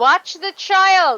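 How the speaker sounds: loud, high, alarmed shout. In character, yelling up the stairs a warning: yelling up the stairs. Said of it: "I'm gonna yell up to D".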